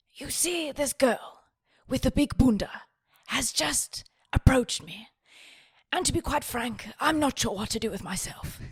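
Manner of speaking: nature documentary narrator voice. Role-playing a bar pickup, the speaker plays the one approached: David Attenborough impression. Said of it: "You're David Attenborough".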